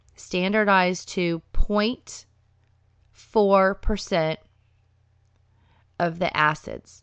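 slow, deliberate delivery. Giving a dosage detail, deliberately saying it slowly. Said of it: "I will say this slowly".

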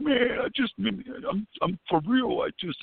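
put-on very high, weepy, heartfelt crying voice. Retelling how a friend answered while tearing up: imitating Joe crying. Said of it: "he'll start crying".

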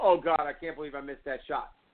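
acted-out self-pitying moan, groaning lament. Retelling a player lamenting a missed shot: imitating a self-pitying lament. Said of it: "stood there and commiserated".

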